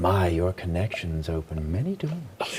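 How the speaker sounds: half-whispered aside, low, hushed, close and secret. Retelling what he half-whispered to the one getting them through the doors: retelling a half-whisper. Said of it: "I make sure to whisper to him".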